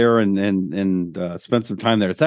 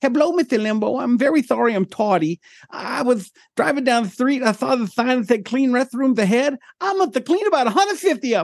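very high, silly, goofy put-on boxer voice, played dumb; 13 semitones higher than usual. Retelling a stupid Mike Tyson impression done for a radio show. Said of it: "I do a stupid Mike Tyson impression".

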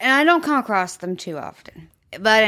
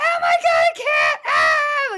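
put-on, very high, very slow, drawn-out terrified scream. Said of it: "she is screaming bloody murder".

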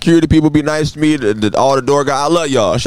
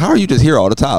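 plain

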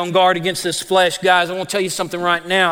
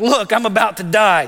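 exaggerated dramatic put-on voice; 2 semitones higher than usual. Retelling how Esau begged his brother for stew: dramatic Esau voice. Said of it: "Esau's a little dramatic".

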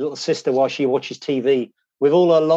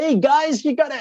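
slight put-on American accent, pitched up; 12 semitones higher than usual. Retelling coming back to england after a trip, put-on american accent. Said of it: "I was even catching a bit of an American accent".

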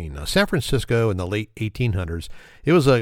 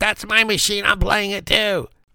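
put-on very high, screeching, screaming little old lady shriek; 11 semitones higher than usual. Telling about trying to sit at a slot machine, imitating a screaming little old lady. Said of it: "the little old lady sitting in the next machine starts screaming".

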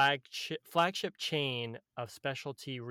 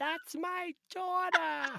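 put-on proud mom voice, pitched higher. Imitating a friend's mom in the restaurant: imitating Deborah. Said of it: "I love doing that impression".

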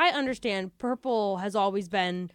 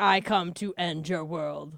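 animated cartoon robot villain voice; 3 semitones lower than usual. Speaker riffs on how a chemical's name sounds, animated robot villain voice. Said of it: "sounds like a villain from an animated robot series".

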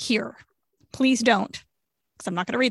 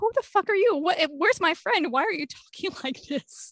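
high, mock incredulous tone through laughter; 7 semitones higher than usual. Recounting a friend giving formal condolences in line, retelling laughing. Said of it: "I started laughing".

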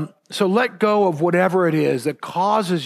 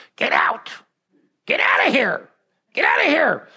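imitated old lady voice, yelling; 8 semitones higher than usual. Retelling how an old lady in another room yelled at visitors: imitating an old lady yelling. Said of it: "she's yelling at us".

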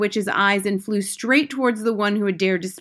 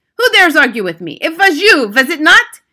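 shrill, very loud, sharp snapping voice; 7 semitones higher, 10 dB louder than usual. A leader of witches whips around at a witch who argued, snapping. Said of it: "she snapped".

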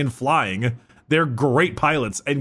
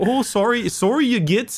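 put-on Canadian accent; 10 semitones higher than usual. Acting out a commando talking to an orc, canadian accent. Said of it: "but in a Canadian accent".

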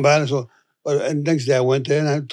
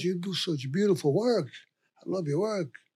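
very hushed, barely-there, soft-spoken voice; 4 semitones higher, 11 dB quieter than usual. Retelling how a neighbour greeted him: imitating a soft-spoken girl. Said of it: "Very, very soft-spoken girl".

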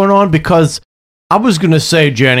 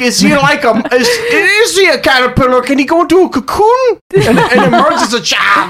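very high-pitched, stumbling, questioning-sounding voice; 10 semitones higher than usual. Joking about a friend's question on the movies: imitating Steph. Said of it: "Steph's like".

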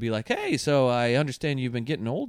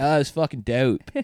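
silly, put-on Baltimore accent. Retelling a Baltimore comedian saying dope, silly Baltimore accent. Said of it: "what a silly accent".

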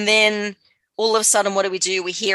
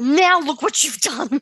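mock crying through the words, higher and tearful; 8 semitones higher than usual. Retelling what Meg does in the episode: imitating Meg crying. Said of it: "She's crying".

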